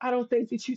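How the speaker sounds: imitated whispering voice. Retelling what a best friend whispered at the club: imitating a friend whispering. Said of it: "she's whispering".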